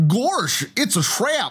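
very high, cartoonish voice. Asked by a co-host to do Admiral Ackbar's line as Goofy: Goofy voice. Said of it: "can you actually do the Admiral Akbar for Goofy?".

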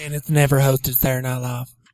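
flat, dry, straight-faced deadpan delivery. Answering the host's quiz question, deadpan. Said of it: "that was my deadpan".

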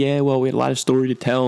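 put-on jokey tone. Speaker retells the other man's reply to his question, retelling a joking reply. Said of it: "he kind of jokingly".

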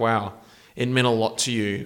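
plain

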